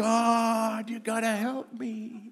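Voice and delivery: desperate, very high cry with God stretched out. Retelling crying out to god when late for a funeral: imitating crying out. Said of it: "I'm crying out to God".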